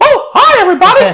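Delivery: very high, loud, squeaky voice. Joking in shows about switching voices, doing a little Mickey voice. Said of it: "for a little Mickey voice".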